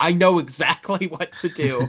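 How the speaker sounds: put-on panic, high and slow. Retelling how Kumail pretended to panic: imitating Kumail's fake panic. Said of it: "pretending to act panicked".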